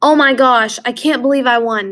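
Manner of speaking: happy exclamation. Explaining exclamation points, the speaker gives an example sentence, a happy exclamation. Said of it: "That's shock".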